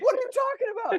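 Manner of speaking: very high, whiny, frustrated protesting tone. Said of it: "you're like".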